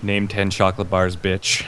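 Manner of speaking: whispered voice. Player's character whispering into the ear of a downed man, whispering. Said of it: "I'm gonna whisper into his ears".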